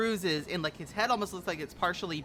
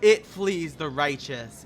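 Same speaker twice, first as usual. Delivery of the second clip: huge, thundering, booming voice, very loud; 3 semitones lower, 8 dB louder than usual. Speaker repeats the line the players hear, in a giant booming voice. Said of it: "giant booming voice".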